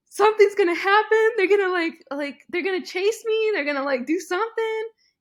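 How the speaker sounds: mock very high, loud hysterical sobbing words. Retelling calling a husband while being followed: imitating hysterical crying. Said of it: "hysterically crying".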